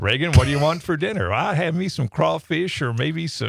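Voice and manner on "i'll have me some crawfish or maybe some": put-on child voice with Southern American accent. Acting out a child's answer about dinner: Reagan's Southern accent. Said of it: "she answers in a southern accent".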